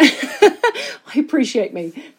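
slow delivery spoken through a laugh.

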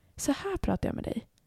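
soft whisper. Showing a podcast co-host how they talk into the podcast: whispering. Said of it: "Jag viskar typ in i podden".

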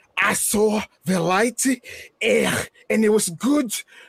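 put-on slow Scouse accent. Imagining a spooky promo in a Scouse accent: Zach Gibson in Scouse accent. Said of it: "especially in that Scouse accent".

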